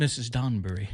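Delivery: bad, put-on British accent. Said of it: "I said it probably incorrectly with a horrible accent".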